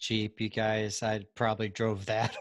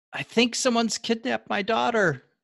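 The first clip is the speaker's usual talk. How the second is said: shrill, very high-pitched shouting woman's voice; 13 semitones higher, 5 dB louder than usual. Narrating a scene, voicing a woman calling from the porch: woman shouting. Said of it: "you hear her shout".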